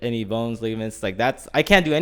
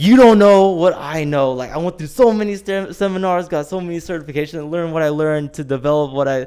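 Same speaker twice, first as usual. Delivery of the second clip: full, high, heated, angry ranting outburst; 6 semitones higher, 6 dB louder than usual. Retelling how a trainer blew up: imitating someone blowing up angrily. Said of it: "he just fully blew up on me".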